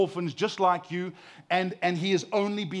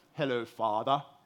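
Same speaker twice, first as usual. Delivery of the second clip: put-on posh British accent; 7 semitones lower, 4 dB quieter than usual. Quoting his kids teasing him when he enters the room, put-on posh british accent. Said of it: "they will put on like a posh British accent".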